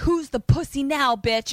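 play-acted, high, mild half-shouted outburst. Retelling a standoff where Dom holds others at gunpoint: imitating someone screaming. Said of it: "now he's screaming and firing".

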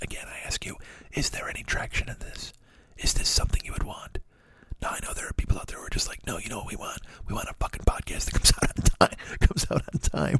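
very quiet, hushed whisper throughout. A podcast host asks listeners whether they want a whispering episode: whispering. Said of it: "I can't laugh while I'm whispering".

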